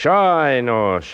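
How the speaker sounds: brushing it off. The director brushes off a performer who imitates bird calls, dismissive.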